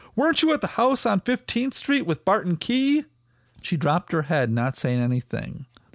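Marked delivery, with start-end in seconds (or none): 0.2-3.1 high, accusing shouted yell. A man confronting a woman late at night, yelling. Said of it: "he yelled".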